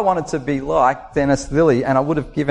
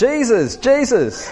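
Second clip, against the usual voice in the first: put-on shrill kindergarten girl voice, much higher; 8 semitones higher than usual. Retelling a kindergarten girl calling out as he arrived, Georgia's shrill little voice. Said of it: "this little shrill voice going".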